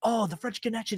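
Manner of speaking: acted-out thrilled, gushing, excited, eager exclaiming. Retelling how a father reacted to watching an old film: imitating someone excited. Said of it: "he was so excited".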